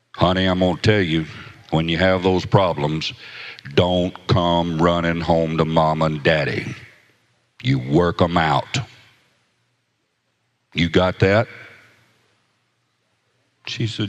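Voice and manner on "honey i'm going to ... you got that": put-on deep gruff big man voice, louder. Retelling the father warning his daughter: imitating a deep gruff voice. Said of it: "had a big old deep gruff voice".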